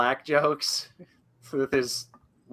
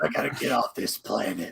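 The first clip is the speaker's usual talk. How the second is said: low, tough-guy voice; 6 semitones lower than usual. Mocking an actor's tough-guy line in Predators: Adrien Brody talking like Batman. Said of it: "He's talking like Batman".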